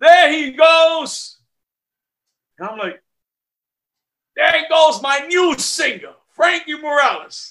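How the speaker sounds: loud, hollered out. Retelling a greeting called out on hotel stairs: imitating a loud call. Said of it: "All I hear in a loud voice is".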